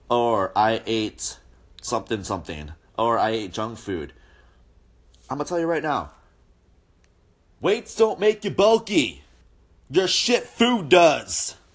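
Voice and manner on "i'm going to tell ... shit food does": heated, fired-up rant with rising pitch. Answering a question they always get worked up about: heated. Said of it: "I didn't mean to get that heated".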